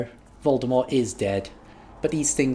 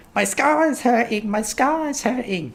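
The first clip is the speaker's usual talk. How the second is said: very high, slow, dragged-out mock moan; 11 semitones higher, 3 dB louder than usual. In a drama scene, a character does an impression of Harry. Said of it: "he does an impression of Harry".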